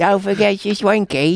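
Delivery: high-pitched put-on British accent. Imagining something that talks and dictates everything, as a Russell Brand impression. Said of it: "it has to have a, a British accent".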